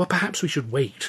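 worried, uneasy. Luscombe hesitates after the narrator offers to take him to see the man; anxious. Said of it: "Luscombe said anxiously".

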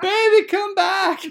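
put-on drake voice. Voicing Sutton the drake searching for his mate. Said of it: "and he's like".

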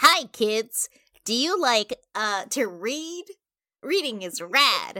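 put-on, slightly nasal kids' mascot voice. Showing friends how a library mascot would sound, nasal library mascot voice. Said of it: "The slight nasality is perfect".

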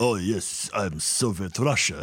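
very slow, drawn-out, put-on Soviet Russian accent. Mocking an actor's shifting film accent: mock Soviet Russian accent. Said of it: "what accent is he trying to do".

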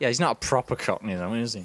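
dismissive, sneering, derisive, scornful tone. Retelling what the other speaker said earlier: imitating a derisive tone. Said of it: "you said it in quite a derisive tone".

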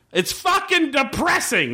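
play-acted very high, swooping, in-your-face yell. Retelling a scene where an actor yells: imitating Bobby Cannavale yelling. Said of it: "just yelling in his face".

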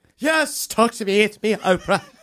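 put-on voice slipping into British accent. Playing Oprah for the others, who ask to talk to her: Oprah impression. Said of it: "Are you British now?".

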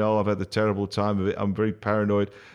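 ordinary delivery

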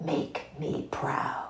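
breathy whisper, barely voiced, very soft. Quoting a show character's words to a listener: whispering like June. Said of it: "I'm just gonna whisper like June did".

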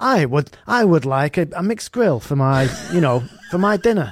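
put-on prim, posh, well-spoken Irish accent. Imagining a pint with the phone's voice guy: imitating posh Irish Siri voice. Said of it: "imagine if you went out for a pint with him and he'd be like".

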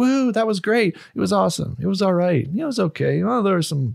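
put-on high cranky old man voice. Two speakers comparing themselves to the Muppets' old guys, Muppets old-guy voice. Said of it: "two old guys in the Muppets".

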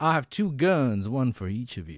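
slow, swooping, put-on sophisticated voice. Explaining the bit, repeating the quote: Val Kilmer impression, faux sophistication. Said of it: "he's pretending to be like".

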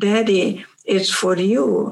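low-key, discreet, understated, confidential tone. Acting out a child telling the father about a phone call: acting out saying it very quietly. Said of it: "you tell your father very quietly".

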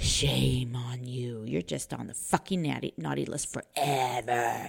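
low, quiet, villainous evil voice. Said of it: "That's my evil voice".

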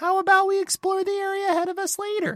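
very high little companion voice. Reading out a letter sent to the podcast, as it asks: Paimon voice. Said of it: "Have [name] read this in Paimon's voice".

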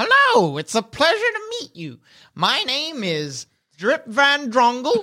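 high, sing-song little gnome voice. Voicing a gnome greeting the players in a doorway: voicing a gnome. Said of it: "The gnome in the doorway addresses you".

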